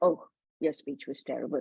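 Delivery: dismissive, belittling, unencouraging tone. Showing how tone changes meaning, in a dismissive tone. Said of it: "the tone of my voice. It is dismissive. It is not encouraging".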